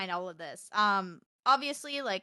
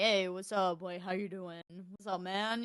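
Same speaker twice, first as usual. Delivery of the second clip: male voice changer, lower and quieter; 2 semitones lower, 3 dB quieter than usual. Retelling testing a voice changer in game lobbies; guy voice changer. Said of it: "I've used my guy voice changer".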